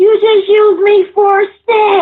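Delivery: very high, loud, called-out hollering. Retelling what he hollered out in a crowded school hallway, imitating the holler. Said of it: "he hollers out".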